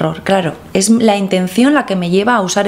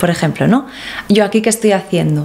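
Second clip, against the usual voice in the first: ordinary talk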